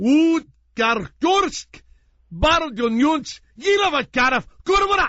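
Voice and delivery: very high, slow, fervent, impassioned gibberish. Retelling acting an argument with an army leader: impassioned made-up language speech. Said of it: "I would give this impassioned speech and have an argument".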